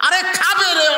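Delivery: mock exasperated, high and loud.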